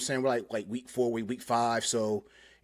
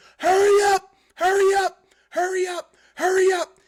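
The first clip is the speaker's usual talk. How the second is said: very loud, shrill mock yelling; 9 dB louder than usual. Retelling how the m t i rushed a trainee: imitating someone yelling. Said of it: "the M T I is yelling and telling him".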